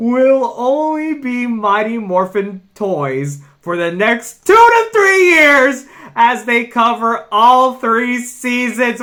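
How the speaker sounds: very loud, high, thrilled excited yelling. Sharing news about Mighty Morphin Power Rangers product, yelling excitedly. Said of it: "I'm yelling because oh my god".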